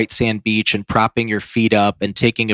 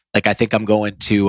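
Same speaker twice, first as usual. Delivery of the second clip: plain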